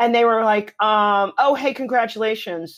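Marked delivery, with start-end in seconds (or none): 1.4-2.8 put-on sarcastic tone. Retelling what mean classmates said to the speaker: imitating sarcastic congratulations. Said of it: "they were kind of sarcastic and they were mean".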